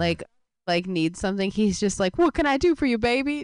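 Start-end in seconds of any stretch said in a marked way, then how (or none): 2.2-3.4 squeaky-clean wholesome nice-guy tone, pitched up. Imitating the voice he uses when a Walnut Creek lady needs something: imitating his wholesome voice. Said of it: "he has this voice he uses when he sees".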